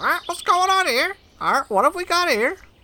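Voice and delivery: put-on parrot voice. Voicing a parrot who spots a stranger in its tree: parrot voice. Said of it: "a parrot perched on a tree".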